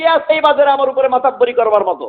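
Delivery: ordinary talk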